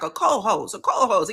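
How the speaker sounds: thick put-on Atlanta accent, r's dropped. Retelling a guy repeating a word: imitating heavy Atlanta accent. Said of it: "he had a really heavy Atlanta accent".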